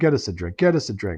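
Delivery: hushed stage whisper, muttered under the breath. Retelling a morning routine, imitating own half-whisper. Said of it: "I start whispering to myself".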